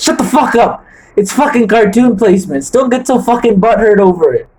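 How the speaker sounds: sudden, faked, angry loss of temper. Snapping at the other speaker who called the ranking unfair: mock angry outburst. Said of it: "I lost my cool there".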